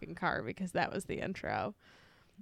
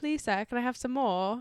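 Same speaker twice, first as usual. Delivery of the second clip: put-on pleading Cockney accent. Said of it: "I'll just have an Oliver Twist accent".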